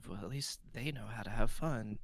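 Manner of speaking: hushed half-whisper under the breath, to oneself. Playing a character who half-whispers to himself before walking away: half-whispering to himself. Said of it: "Galen like whispers to himself".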